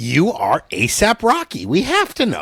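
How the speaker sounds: very slow, drawn-out voice swooping up high. Describing a well-known interviewer to the others: Nardwuar voice. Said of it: "he's got a voice like this".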